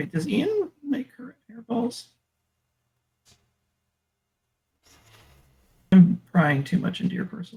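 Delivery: quiet mumble. Asking the other speaker a personal question about their cat, mumbling. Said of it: "You're gonna have to speak up".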